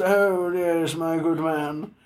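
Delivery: put-on upper-crust British accent. Talking about people putting on fake British accents, the speaker does a fake upper-crust British accent. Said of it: "The fake upper crust".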